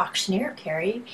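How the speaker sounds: quiet, hushed whisper.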